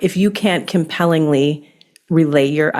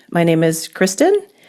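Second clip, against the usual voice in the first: question-like rising upspeak at the end on Kristen. Explaining upspeak with an example introduction, upspeak rise on Kristen. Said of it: "upspeak is where you're going up at the th- end of a sentence. So it's like asking a question".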